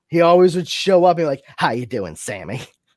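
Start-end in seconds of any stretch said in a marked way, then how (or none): 1.5-2.6 put-on snide voice, lower and quieter. Showing an impression of Uncle Arthur from Bewitched: Paul Lynde impression. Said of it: "I'm doing an impression of Paul Lynde as Uncle Arthur".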